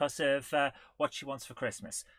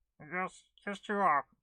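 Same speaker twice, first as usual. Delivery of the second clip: goofy cartoon duck puppet voice. Voicing Ed the Duck while the person beside them can't stop laughing: Ed the Duck voice. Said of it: "Ed the Duck only ever squeaked".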